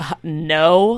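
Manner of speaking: mock sassy, rude, dismissive, drawn-out delivery. Retelling answering a cop's question: imitating own rude reply. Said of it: "Like, really rude".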